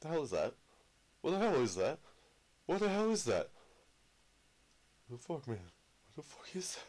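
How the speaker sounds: startled, frightened, high swooping exclamations. A player exploring cave systems in a game spots something unexpected; scared, startled. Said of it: "it scared the crap out of me".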